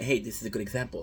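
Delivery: ordinary delivery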